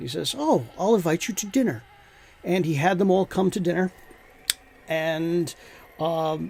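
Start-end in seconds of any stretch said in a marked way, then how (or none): 0.4-1.8 put-on Romanian accent. Telling how Vlad the Impaler answered starving people, Romanian voice. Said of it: "I do the Romanian voice".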